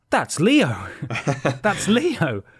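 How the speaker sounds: sing-song, swooping character voice. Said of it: "we say Leo, his own name in his voice".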